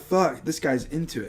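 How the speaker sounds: ordinary delivery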